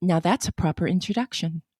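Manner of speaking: soft, low impression voice. Quoting the red-haired actress's movie line, imitating the red-haired actress. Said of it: "You actually got the tone of her voice".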